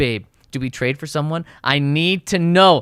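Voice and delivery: ordinary talk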